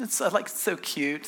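mock condescending tone. Retelling how the call center boss spoke to a coworker: imitating a condescending tone. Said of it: "it's condescending".

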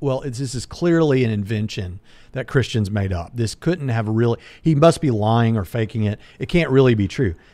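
ordinary delivery

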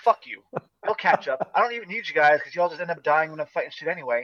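put-on hot-tempered, heated, fed-up dismissive outburst. Retelling own retort to party members in a dungeon: imitating a heated retort. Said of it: "I'm getting too heated".

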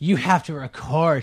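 high, loud teasing through laughter. Retelling how someone laughed at him over having to record: retelling laughing, teasing speech. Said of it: "Amber starts laughing at me going".

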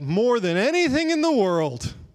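grudging, sarcastic, sing-song high-pitched delivery. Telling about a couple, the speaker acts out the husband's reply: acting out a sarcastic reply. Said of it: "sarcastically said".

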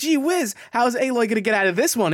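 put-on eager child voice. Imitating the other speaker as a child at story time: pretend eager child at story time. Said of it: "You're like".

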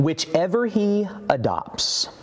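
slow, careful, deliberate reading aloud.

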